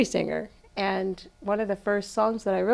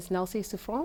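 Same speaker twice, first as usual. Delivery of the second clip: word pronounced with a French accent; 11 dB quieter than usual. Saying the name of an independent artist: French accent. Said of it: "I have to say that with my French accent".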